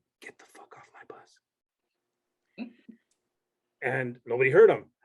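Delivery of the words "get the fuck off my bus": very slow, hushed drill-instructor-style whisper. Retelling how a drill instructor on the bus spoke: imitating a whispering drill instructor. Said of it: "whispers to us".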